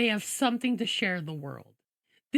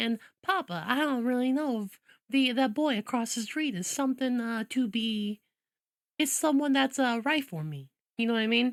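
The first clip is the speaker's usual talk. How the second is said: mild, genteel Southern belle accent. Demonstrating an accent choice, speaking to Papa in a soft Southern belle accent. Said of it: "I go for a more softer Southern belle".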